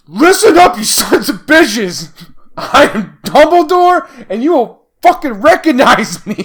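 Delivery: intense, fierce, very loud shouting. Retelling a scene from the third film, speaking as Dumbledore: intense Dumbledore impression. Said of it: "like you got real intense, real fast".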